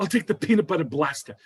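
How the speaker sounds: put-on New York accent. Retelling Rosie O'Donnell ordering a flavor: Rosie O'Donnell New York accent. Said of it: "her accent was so New York".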